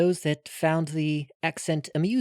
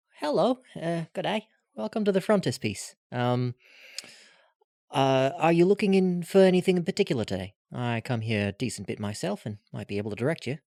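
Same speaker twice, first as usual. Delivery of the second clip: friendly, welcoming, helpful customer-service voice. A narrator greeting a student at a doorway, putting on his best friendly voice. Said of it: "try to put on my best friendly voice".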